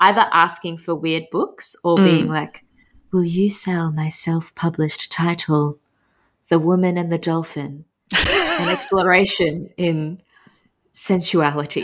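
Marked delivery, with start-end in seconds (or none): 3.1-11.8 put-on breathy voice of a mystical lady. Retelling bookshop customers asking to sell books: imitating a breathy crystal lady. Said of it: "breathy, weird crystal ladies coming in".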